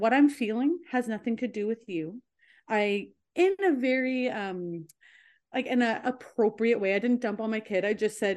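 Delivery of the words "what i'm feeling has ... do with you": ordinary talk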